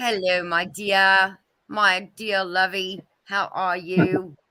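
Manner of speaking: fake put-on English accent. Greeting someone just spotted: put-on English accent. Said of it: "I don't know where the English accent came from".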